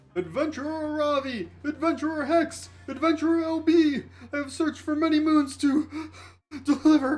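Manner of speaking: weird calling-out voice. Narrator voicing a messenger calling out to the adventurers: weird calling-out voice. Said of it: "y'all hear a weird voice calling out to you".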